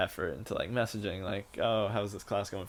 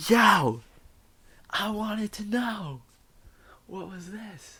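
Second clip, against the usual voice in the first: very high, loud, drawn-out scream; 12 semitones higher, 7 dB louder than usual. Acting out a student yelling a question over the mic: imitating a student screaming. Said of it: "Just screaming. Screaming like they can't hear you".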